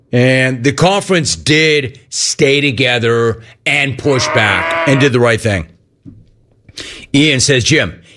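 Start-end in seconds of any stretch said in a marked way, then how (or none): none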